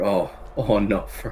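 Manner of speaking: put-on sad, sorrowful voice, slow pace. Reacting to Fern reminding him of someone he no longer speaks to, mock-sad voice. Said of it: "sad, sad voice, sad boy".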